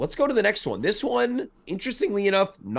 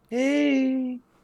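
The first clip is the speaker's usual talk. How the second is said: put-on high drunk guy voice "hey" called out. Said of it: "The drunk guy in the car".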